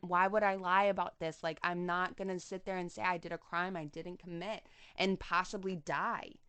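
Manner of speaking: plain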